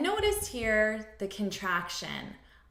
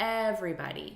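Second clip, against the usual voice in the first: "everybody": first syllable stressed, rest lighter. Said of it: "we're stressing the first syllable".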